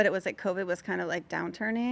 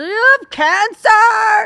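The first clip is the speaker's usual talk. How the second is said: mock drunken voice, shrill, booming, loud, dragged out; 17 dB louder than usual. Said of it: "she's drunk and she sits next to me".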